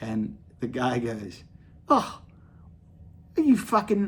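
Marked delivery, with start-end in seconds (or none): 1.9-4.1 put-on Australian or English accent, higher pitch. Retelling the old guy asking if the speaker is American: imitating an Australian or English accent. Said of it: "I mix up my Australian and English all the time when I do my accents".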